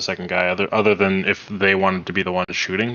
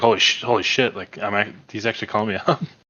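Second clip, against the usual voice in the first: emotional, choked-up, halting, stumbling astonishment and disbelief; 2 semitones higher than usual. Retelling a character's reaction on being picked, imitating someone choked up. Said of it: "He was so choked up".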